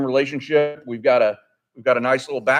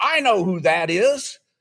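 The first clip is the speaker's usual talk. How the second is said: put-on high, declaring little-girl voice; 5 semitones higher than usual. Retelling a small girl calling out to her parents, imitating a child saying loudly. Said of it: "she says to her parents very loudly".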